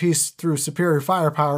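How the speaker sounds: normal talking voice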